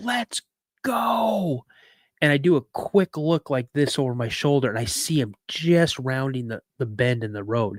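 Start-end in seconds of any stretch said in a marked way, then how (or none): 0.0-1.6 mock high yelled scream, "go" stretched out. Retelling a younger brother screaming to run: imitating a brother's scream. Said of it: "I hear my little brother scream".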